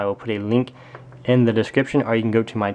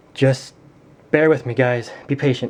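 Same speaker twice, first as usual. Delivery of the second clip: breathless, running out of breath; 2 semitones higher than usual. Addressing viewers in a video, out of breath. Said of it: "I'm running out of breath".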